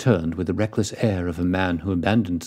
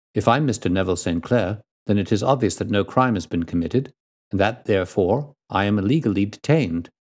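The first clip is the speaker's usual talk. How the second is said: usual speaking voice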